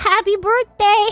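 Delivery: put-on teeny tiny little voice. Retelling speaking up after a moment of silence: teeny little voice. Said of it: "in a teeny little voice".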